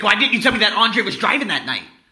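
acted, high, loud, furious screaming. Retelling how Mom confronted them about Andre, the speaker acts out her angry scream. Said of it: "she was so angry".

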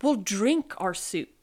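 ordinary delivery

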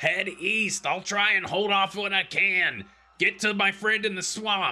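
very high, loud screaming. Narrating a game, the speaker gives Ma's call from behind the player as fires spread, screaming. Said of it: "Ma just kind of screams out behind you".

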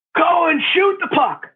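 high, shrill bellow, pitched way up. Recalling hockey on the ice, imitating Coach Olsen bellowing. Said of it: "you hear Coach Olsen bellow out".

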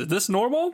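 high, anxious character voice.

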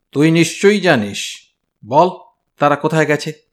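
harsh scolding. Reading a story, Malati's brother confronts the narrator at his shop: scolding. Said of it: "সে আমাকে ধমক দিয়ে বলল".

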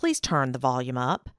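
bossy, commanding, controlling low voice. A parent showing the tone used on a teenage son: controlling parent tone. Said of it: "That was my controlling tone".

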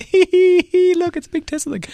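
put-on very high, slow, thrilled young boy's voice. Retelling pulling up to a big tesla sign, imitating an excited 12-year-old boy. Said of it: "start talking like a 12-year-old boy".

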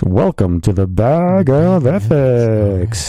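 put-on radio announcer voice, very slow, drawn out. Introducing a school game called Bag of Ethics: put-on radio announcer voice. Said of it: "here's the radio voice".

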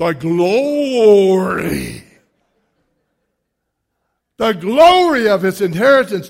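loud southern preacher voice, drawn-out "glory". Reading a scripture passage, the speaker answers a request with a southern preacher voice. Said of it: "but say it like a southern preacher?".

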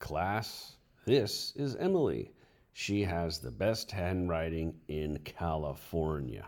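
ordinary talk

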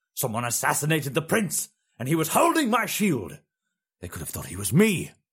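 muffled, hysterical, high, swooping, tinged with madness. The Emperor answers the potentate's reassurance, muffled, hysterical, tinged with madness. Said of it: "muffled, hysterical, tinged with madness".

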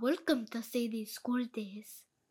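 funny, slightly Slavic-tinged voice. Trying out the show's intro in a funny voice, with a slight Slavic accent. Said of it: "It was a little, like, Slavic".

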